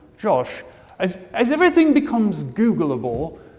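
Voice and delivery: put-on English accent. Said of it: "everything he says sounds cooler".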